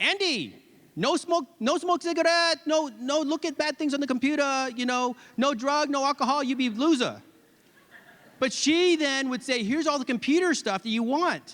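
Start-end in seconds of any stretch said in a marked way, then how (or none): 0.0-7.2 put-on thick Vietnamese accent. Recalling the rules she taught the speaker as a kid, thick Vietnamese accent. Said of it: "she was speaking her thick Vietnamese accent".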